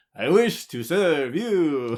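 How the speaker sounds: slow, mock scornful, mocking tone. Retelling a character's line to her companion, imitating a mocking tone. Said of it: "does it in a mocking tone".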